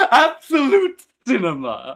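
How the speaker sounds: very high, very loud, swooping sing-song voice. Answering a request to say the line: voice of It. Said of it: "can you say absolute cinema in the voice of It?".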